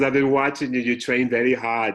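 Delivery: put-on booming Austrian accent.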